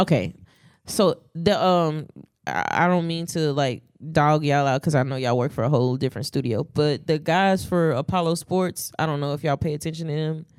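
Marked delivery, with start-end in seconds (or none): none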